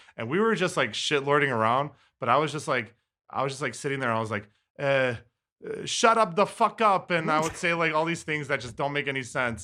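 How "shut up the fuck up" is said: put-on very high, slow, drawn-out European accent. Speaker recalls role-playing in VR chat with a Serbian player, in a put-on European accent. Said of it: "I think I'm gonna try a Euro accent".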